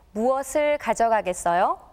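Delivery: pitch rises at the end of 가져가겠어요. Teaching Korean question forms, with a rising tone at end of 가져가겠어요. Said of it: "we can raise the tone of the voice at the end".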